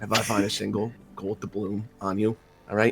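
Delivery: whispering out the side of the beak. Playing a character leaning in to threaten a captive mage: whispering out the side of the beak. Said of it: "whisper out the side of it".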